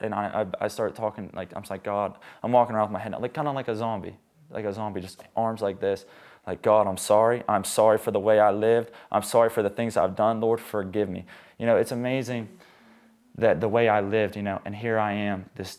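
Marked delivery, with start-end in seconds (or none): 6.6-11.3 mock tearful crying voice, louder. Retelling praying aloud while crying in a gym: retelling a tearful prayer. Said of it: "I start crying".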